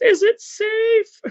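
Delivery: very high-pitched mock yell. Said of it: "she yelled".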